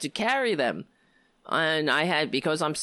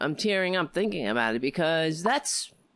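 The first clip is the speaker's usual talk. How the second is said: usual speaking voice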